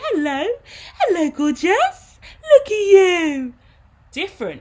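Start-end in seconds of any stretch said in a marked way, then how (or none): 0.0-3.5 put-on slow, swooping, pitched-up sing-song baby talk, drawn-out "you". Showing how the voice is switched to talk to a dog or baby: talking to a baby. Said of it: "if I'm talking to a baby".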